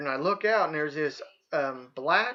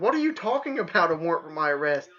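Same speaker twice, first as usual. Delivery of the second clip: put-on loud, really raised voice. Retelling answering a detective at the door: imitating own raised voice. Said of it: "I actually really raised my voice".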